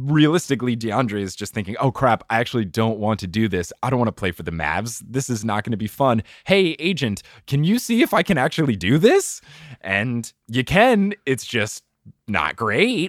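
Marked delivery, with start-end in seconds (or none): none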